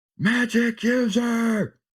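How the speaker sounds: very high shout, stretched and drawn out. Calling out in character during a fight, as a free action: in-character shout. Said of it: "I'm just gonna shout out".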